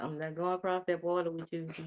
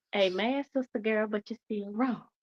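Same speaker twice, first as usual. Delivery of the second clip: polite voice in a churchlike manner; 4 semitones higher than usual. Showing how the speaker would tell someone off at church, in a soft church voice. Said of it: "In the soft voice, in the church voice".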